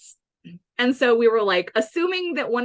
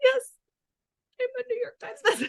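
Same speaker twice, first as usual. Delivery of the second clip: very high, tearful, acted-out crying voice; 14 semitones higher, 4 dB quieter than usual. Retelling crying while standing up to give a school assembly: imitating own past crying. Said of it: "I would start crying, like".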